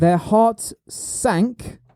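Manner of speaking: very slow delivery, sank stressed. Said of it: "you put the emphasis on sank".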